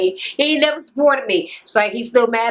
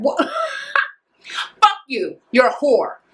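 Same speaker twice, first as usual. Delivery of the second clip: mock furious, very slow, dragged, high and swooping; 5 semitones higher than usual. Retelling a woman's reaction after he said something hurtful, mock-angry. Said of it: "She was mad".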